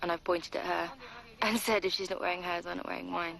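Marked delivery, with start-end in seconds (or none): none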